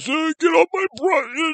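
put-on very high backwoods old-man voice, drawn-out butt. Describing an old couple's remote property, imitating the old guy with a shotgun. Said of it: "talks like this".

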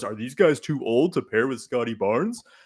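goofy cartoon dinosaur voice. Discussing basketball players on a podcast, accidentally in a Barney voice. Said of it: "I don't know why I sounded like Barney there".

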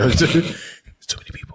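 hushed whisper. Acting out someone asked why they whisper around many people, whispering. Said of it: "Why are you whispering?".

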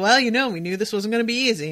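fast, loud, cavalier, dismissive breezy brush-off.

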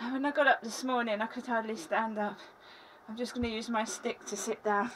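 breathless, winded, catching air while talking. Apologizing to the audience while using a stick to sit down, out of breath. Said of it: "I'm out of breath".

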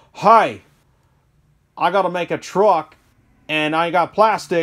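put-on American accent. Acting out Redcat phoning the Rubbermaid company: Redcat in put-on American accent. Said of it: "I got to get an American accent".

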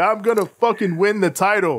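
mock, mild, restrained, held-back yell. Retelling how Jay Lethal grabbed a headset: imitating Jay Lethal yelling. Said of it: "just starts yelling".

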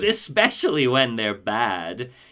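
slow, play-acted gleeful cackle through the words. Retelling a villain pointing a gun at Batman: imitating Henry cackling. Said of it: "he cackles with a big Joker grin".

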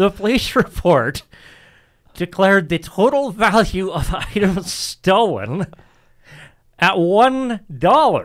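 fighting off a stifled laugh. Telling a theft story and reading out the police report, holding back laughter. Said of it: "I can't even say this without laughing".

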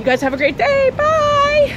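out of breath, loud, very high-pitched voice. Walking fast while signing off to viewers, out of breath. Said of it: "I'm out of breath because I'm walking really fast".

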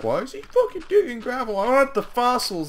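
mock whiny voice, high, loud, squealing, annoyed.

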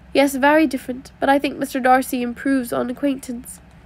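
plain

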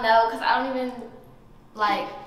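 low, stammering, stuttering, tripping over words. Contestant number three answers a question about one-night stands, stuttering. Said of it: "Stuttering, bro!".

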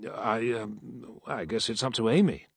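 uncertain delivery. A man at the table answers when his name is mentioned, uncertainly. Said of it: "he said uncertainly".

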